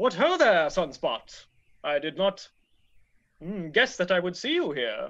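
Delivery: talking fish character voice. Voicing a big talking fish in a vest who greets Sunspot: voicing a talking fish. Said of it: "And he says".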